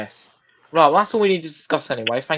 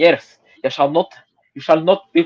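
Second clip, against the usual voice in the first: put-on Scottish accent. Speaker taking on the next part, in Scottish accent. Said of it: "I think I'll do this in my Scottish accent".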